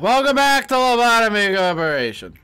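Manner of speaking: put-on loud, drunk cabaret showman voice. Starting the session and greeting listeners, in a drunk cabaret showman voice. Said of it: "You became like a drunk cabaret showman".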